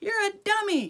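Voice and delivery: ordinary delivery, nothing marked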